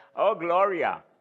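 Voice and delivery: put-on American accent. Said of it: "en su acento americano decir".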